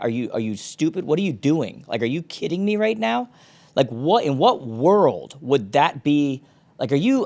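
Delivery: mock angry scolding. Recalling talking to Noah, retelling an angry scolding. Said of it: "I am not happy".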